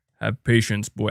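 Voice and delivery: attempted very deep voice. Reading out a viewer's suggestion, attempting a deep Kratos voice. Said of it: "I cannot get my voice that deep".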